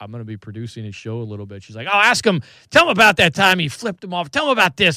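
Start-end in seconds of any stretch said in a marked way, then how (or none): 1.9-5.0 mock angry, worked-up, pitched-up mom voice. Recalling his mom's reaction to news about his new producing job, imitating mom getting angry. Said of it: "Like she got all angry".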